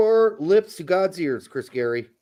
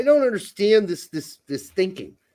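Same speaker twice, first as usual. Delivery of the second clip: usual speaking voice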